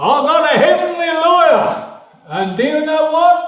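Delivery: very loud, booming, high-pitched preacher voice. Remembering a preacher addressing his congregation, imitating his huge, loud voice. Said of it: "he used to say in his huge, loud voice".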